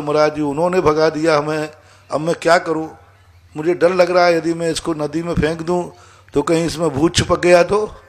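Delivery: ordinary talk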